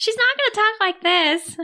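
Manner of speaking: very high, squeaky cartoon voice, way up high. Discussing how a character speaks, showing how she won't talk: Betty Boop voice. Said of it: "You want to be like Betty Boop?".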